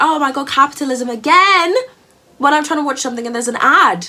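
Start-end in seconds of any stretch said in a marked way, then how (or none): 0.0-1.7 mock screaming, yelled outburst. Retelling reacting to an ad on the tv: imitating own screaming. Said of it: "screaming at my T V".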